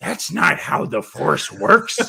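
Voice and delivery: put-on rough, slow old man voice. Doing an old Harrison Ford impression, crusty old voice. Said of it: "I love the crusty old".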